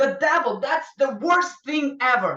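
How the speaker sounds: loud cry of anger and despair. Retelling an angry man entering the room: imitating an angry despairing scream. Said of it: "he just screamed, you know, with a voice of despair".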